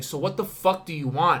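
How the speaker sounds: acted-out annoyed, fed-up, irritated tone. Retelling a bar argument with a drunk man: imitating own irritated retort. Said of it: "I was a little irritated".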